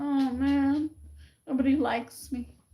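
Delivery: mock-depressed moping. Describing how she used to cope with the pain, acting out past depressed moping. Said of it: "but I just got depressed".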